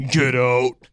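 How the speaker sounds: put-on, deep, guttural growl, dropped low. Showing the others a possessed woman's voice: imitating a deep guttural voice. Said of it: "That very, very deep".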